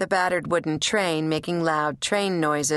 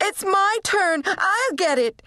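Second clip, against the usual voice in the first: shrill cry, very high and very slow; 14 semitones higher, 3 dB louder than usual. Narrator reads a boy racing a girl to the house phone, shrieking. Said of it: "Rob shrieked".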